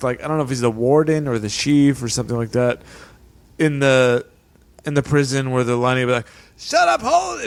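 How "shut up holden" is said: put-on yelling, higher. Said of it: "Always yelling at him".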